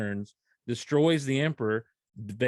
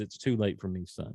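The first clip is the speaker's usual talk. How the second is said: put-on sad villain voice, lower and quieter; 5 semitones lower, 5 dB quieter than usual. Retelling a scene with Luke, quote his father's answer to him, imitating Vader's disappointment and sadness. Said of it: "there is disappointment and sadness in Vader's voice".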